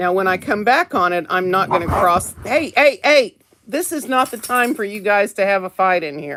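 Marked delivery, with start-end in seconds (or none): 2.4-6.4 sudden, sharp scolding shout. Breaking off mid-demonstration to stop the kids fighting: yelling. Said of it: "I didn't mean to yell".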